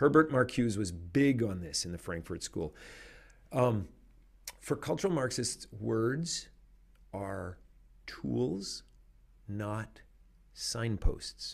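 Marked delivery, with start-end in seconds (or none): 4.6-11.5 very slow, halting, word by word. Speaker says a key phrase so listeners won't miss it, said really slowly. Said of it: "I said that really slowly".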